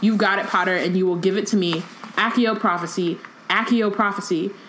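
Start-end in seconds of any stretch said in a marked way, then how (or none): none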